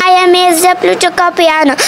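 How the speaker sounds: usual speaking voice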